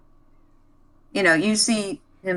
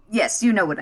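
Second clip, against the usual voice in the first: usual speaking voice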